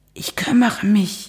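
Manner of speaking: hushed stage whisper. On the phone with a shouting caller, whispering. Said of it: "flüsterte [name]".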